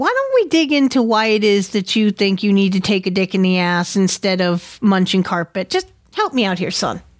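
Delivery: put-on sarcastic, faux-reasonable parent voice. Acting out a parent talking to a child about a phase: put-on snarky, facetious tone. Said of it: "I was being completely snarky and facetious".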